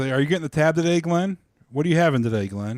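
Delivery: play-acted, joking, playful teasing tone. Retelling a listener teasing the speaker: imitating someone joking. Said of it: "he's joking with me".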